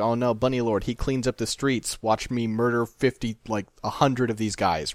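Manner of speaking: ordinary talk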